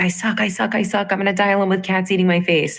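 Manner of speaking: mock nagging, berating voice. Acting out the critical mind screaming at us: imitating a screaming inner critic. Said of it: "always screaming at us".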